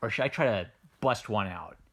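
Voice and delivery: normal talking voice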